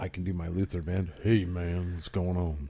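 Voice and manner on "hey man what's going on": deep radio DJ voice. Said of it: "Give us your nice, uh, F M voice".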